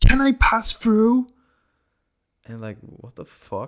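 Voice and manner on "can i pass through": shrieking, very high, very loud, shrill yell. Retelling a woman behind them on the sidewalk asking to pass: imitating someone yelling. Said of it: "and yells".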